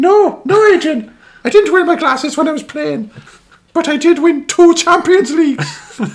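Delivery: loud, high-pitched squeaky voice. Retelling a TV exchange with Adrian Charles in a squeaky voice imitating Martin O'Neill. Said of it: "I need to do the, the squeaky voice".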